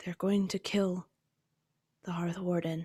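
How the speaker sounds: soft-spoken, quiet, hushed voice. Narrating how she turns on her heels to the rest and tells them, in her quiet voice. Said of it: "in her quiet voice".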